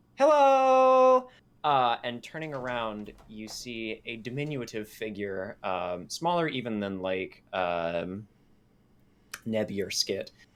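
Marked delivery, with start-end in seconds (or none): 0.2-1.3 piping, very high, very loud, drawn-out little voice. A storyteller voices a small figure greeting from behind, high-pitched character voice. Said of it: "a sort of like high pitched voice that's just like".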